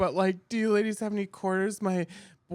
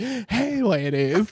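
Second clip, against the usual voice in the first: deliberately camp-sounding voice; 4 dB louder than usual.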